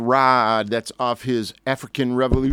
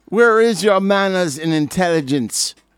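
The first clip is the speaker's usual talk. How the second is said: worst fake Jamaican accent, pitched up; 7 semitones higher, 4 dB louder than usual. Giving a note to anyone who needs it, in a bad Jamaican accent. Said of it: "In my worst Jamaican freaking accent".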